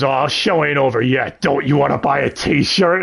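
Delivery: deep, snarling demon voice. Quoting Raptor while fighting a bunch of hunters, in a deep snarling demon voice. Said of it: "demon, deep-ass voice ever while snarling".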